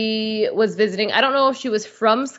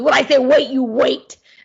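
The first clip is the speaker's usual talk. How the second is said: put-on loud, stern, dead-serious little-kid voice; 3 semitones higher, 5 dB louder than usual. Retelling a little kid talking to his brother, imitating his serious tone. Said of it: "the way he's so serious".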